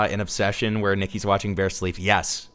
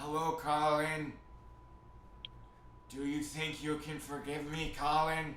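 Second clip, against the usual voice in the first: put-on disturbing, unsettling voice, higher and quieter; 6 semitones higher, 15 dB quieter than usual. Showing viewers on face cam how this feels: put-on disturbing delivery. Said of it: "He just keeps going".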